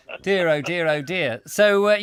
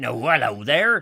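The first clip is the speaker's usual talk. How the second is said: bellowed stock yokel farmer voice. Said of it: "This is cliche farmer voice".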